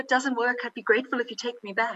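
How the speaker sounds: sugar-sweet, sweetest possible voice. Retelling your reply to people worried about you going on your own, mock-sweet voice. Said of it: "in my sweetest voice".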